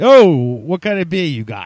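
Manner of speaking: Jersey Shore accent, yelled out very loudly. Yelling a line when asked to scream in Jersey Shore: Jersey Shore accent. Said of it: "Jersey Shore".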